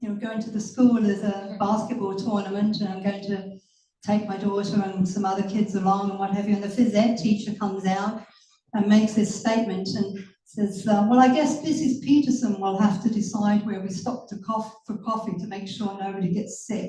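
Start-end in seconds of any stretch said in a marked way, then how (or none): none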